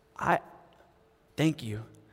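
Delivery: put-on crying. Retelling what a man said after a prayer, imitating someone crying. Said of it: "and he's crying".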